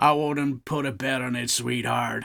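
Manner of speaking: bad put-on American accent, condescending and patronising. Imagining the Meta guy's patronising reply: crappy American accent. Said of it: "Sorry for the crappy American accent".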